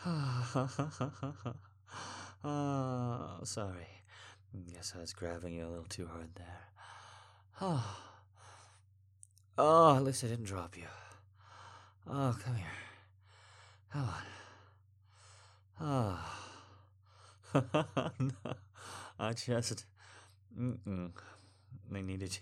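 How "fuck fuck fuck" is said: breathless, out of breath, half-whispered. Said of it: "I needed you off my lap just for a second to breathe".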